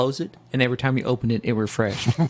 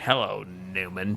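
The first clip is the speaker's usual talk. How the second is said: hushed, deep, reverberating voice from the diaphragm; 6 semitones lower, 7 dB quieter than usual. Trying out a greeting to Newman with the others on the show, in an Emperor Palpatine voice. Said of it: "I sounded like Emperor Palpatine".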